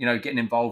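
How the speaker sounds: ordinary delivery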